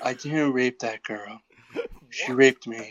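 whispered put-on voice. Urged by others to do some Trump, having to keep quiet: whispered Trump impression. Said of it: "I have to whisper".

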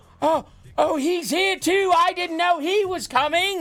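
put-on very high, thrilled, drawn-out excited surprise. Retelling how someone reacted when Kyle O'Reilly came out on NXT, imitating excited surprise. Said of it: "And like got excited about it".

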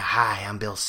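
terrible whiny smoker-sounding voice. Attempting an impression he calls terrible, Bill impression, whiny cigarette voice. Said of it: "whiny little cigarette voice".

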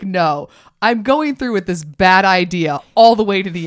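usual speaking voice

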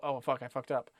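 plain

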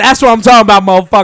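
full-throated, very loud, high holler. Celebrating a right answer about July fourth: loud shout. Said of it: "that was a little loud".

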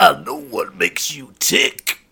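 peak macho wrestler voice, very deep and slow. Performing a line on request in the wrestler's voice: peak macho wrestler voice. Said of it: "in that voice?".

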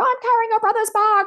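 put-on screaming. Retelling a woman's reply to a kid asking her to carry his bag, retelling a woman screaming. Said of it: "she's screaming at this kid".

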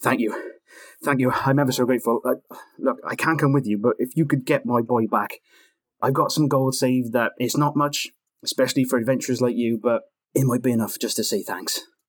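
faint, tentative hope, grateful, emerging from despair. Game master voicing a blacksmith thanking the adventurers: vague flicker of hope. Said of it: "He goes from despair to a vague flicker of hope".

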